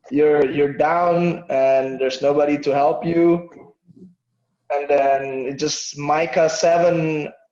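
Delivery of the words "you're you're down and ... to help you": plain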